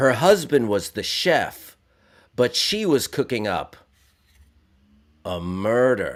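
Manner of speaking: slow, swooping, dramatic, drawn out, leaning on murder. Reading out jokes one by one, in David Caruso voice. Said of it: "I will read them uh, in the voice of David Caruso".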